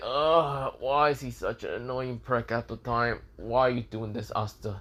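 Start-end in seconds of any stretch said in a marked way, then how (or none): none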